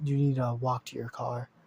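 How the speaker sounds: mild, toned-down delivery. Retelling a scene where a security guard offers to walk someone, in a bit of a quiet voice. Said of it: "he kind of talks in this little bit like quiet voice".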